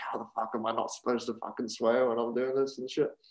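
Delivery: soft half-whisper under the breath. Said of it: "He's like whispering to [name]".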